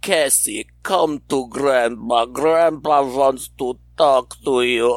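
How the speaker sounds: put-on sinister, coaxing, creepy old-man Slavic accent. Retelling a creepy story someone told about a grandpa, creepy Slavic grandpa accent.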